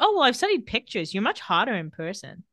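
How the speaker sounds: ordinary delivery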